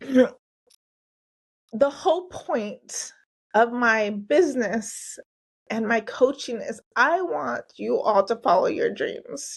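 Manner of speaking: moved, heartfelt, emotional, slow delivery. Telling listeners the whole point of the coaching business, emotional. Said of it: "I got really emotional".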